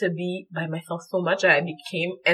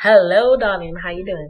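fake Southern American accent, louder; 6 dB louder than usual. Greeting the co-host at the start of the podcast: put-on Southern American accent. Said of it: "Southern accent, you know?".

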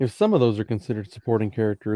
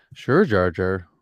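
put-on dismissive voice, lower; 4 semitones lower than usual. Retelling how Qui-Gon brushes off Jar Jar: imitating Qui-Gon dismissively.

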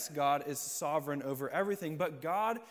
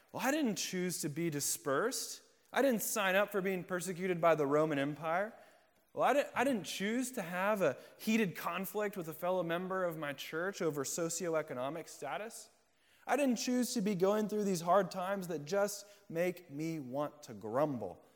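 normal talking voice

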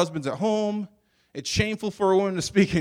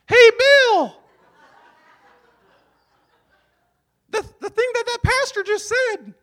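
very high, loud, really horrible fake woman's voice; 7 dB louder than usual. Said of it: "This is a really horrible woman's voice".

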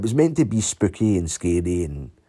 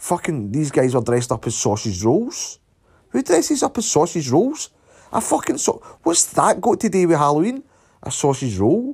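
carried-away swearing rant, pitched up; 7 semitones higher than usual. Complaining about halloween costumes: ranty and sweary. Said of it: "As you can tell with my voice, I'm getting a bit carried away".

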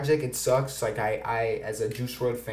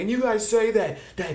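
much higher, mocking impression voice. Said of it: "And then she's like".

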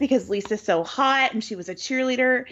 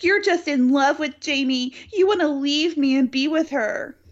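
mock sobbing while speaking; 3 semitones higher than usual. Retelling what a woman says to him as she starts sobbing, imitating someone sobbing. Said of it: "starts sobbing".

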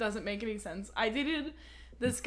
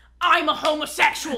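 yell, pitched higher and louder; 7 semitones higher, 11 dB louder than usual. Retelling a friend yelling at the speaker in a store: imitating someone yelling. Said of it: "he's yelling at me".

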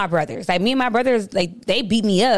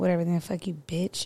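mock under-breath mutter, much quieter; 4 semitones lower, 9 dB quieter than usual. Speaker retells what a man said during a dispute, retelling an under-breath mutter. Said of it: "I heard it under his breath".

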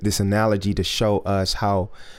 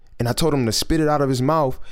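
plain

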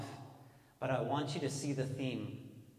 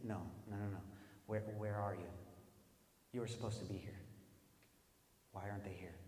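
low, searching, longing voice; 4 semitones lower, 10 dB quieter than usual. Retelling the garden scene, voicing the Lord calling out: God's voice, not mad. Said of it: "I truly believe that he was saying".

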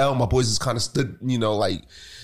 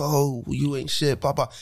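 drawn-out, jeering, put-on screaming; 3 semitones higher than usual. Retelling a street fight, imitating the knocked-down woman's friends screaming. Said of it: "sitting there screaming like".

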